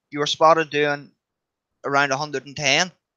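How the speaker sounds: plain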